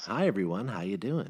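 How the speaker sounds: put-on creepy, unsettling children's show host voice. Retelling a straight-laced man walking in and greeting everyone: creepy Mr. Rogers voice. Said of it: "Kind of like a creepy Mr".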